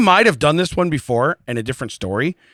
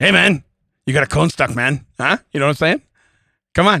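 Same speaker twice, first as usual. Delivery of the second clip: put-on talking parrot character voice. Two people trading voices; the speaker is doing a put-on voice. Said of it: "I'm learning more voices".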